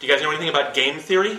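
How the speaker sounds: fast, worked-up chatter.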